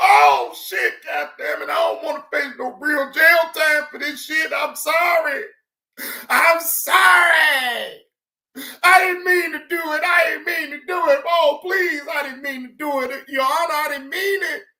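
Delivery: acted tearful, high-pitched sobbing, crying voice. Imitating someone crying and begging a judge: mock crying, imitating Biz. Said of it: "You was crying like a motherfucker".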